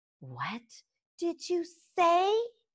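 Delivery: high, swooping hissed delivery. A she-dragon just insulted by another dragon turns on him: hissed. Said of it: "Hissed Fireworm".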